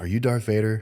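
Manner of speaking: ordinary talk, nothing marked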